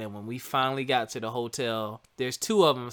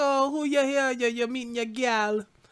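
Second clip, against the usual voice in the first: terrible, very high-pitched put-on Jamaican accent; 12 semitones higher than usual. At the airport, retelling what Elia asked, imitating Elia in a terrible Jamaican accent. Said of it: "that was a terrible Jamaican accent".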